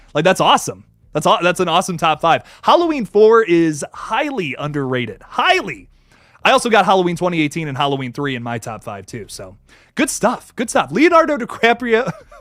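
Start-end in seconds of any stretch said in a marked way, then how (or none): 11.0-12.2 giggling, laughing while speaking, higher pitch. Reading out a viewer's name from a super chat, laughing while saying it. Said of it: "I can't even say it without laughing".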